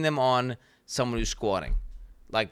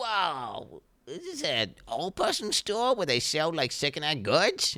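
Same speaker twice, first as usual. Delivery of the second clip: exaggerated, swooping put-on livestreamer voice; 4 semitones higher than usual. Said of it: "And he'd be like".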